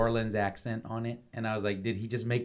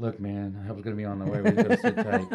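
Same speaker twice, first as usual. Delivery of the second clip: play-acted fed-up exasperation, loud and swooping; 5 dB louder than usual. Retelling how an actor delivered his line: imitating an exasperated actor. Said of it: "a deep, exasperated breath".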